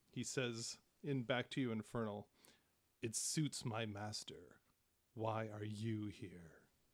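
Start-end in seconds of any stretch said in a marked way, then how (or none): 3.0-6.5 low murmuring under breath, slower. A narrator voices a character answering a player in Infernal, murmuring under his breath. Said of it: "he just murmurs kind of under his breath".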